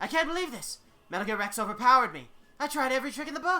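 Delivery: very high, very loud shouted cartoon voice. Reading how a story ends in the Monokuma voice. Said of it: "this is gonna be tough for me to do in the Monokuma voice".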